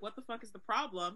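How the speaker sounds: ordinary talk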